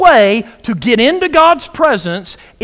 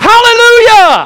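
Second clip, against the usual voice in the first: very high, loud, jubilant joyful shout; 11 semitones higher, 7 dB louder than usual. Demonstrating the joyful shout the verse calls for: joyful shout. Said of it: "make a joyful shout to the Lord, all you lands. I'll do it for you".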